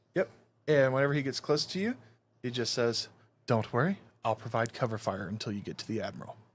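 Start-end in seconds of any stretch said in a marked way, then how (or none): 3.5-6.4 calm, low, soothing, collected voice. Quoting what The Smith says when he runs up beside someone, calm, collected voice. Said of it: "he's in a nice, calm, collective voice".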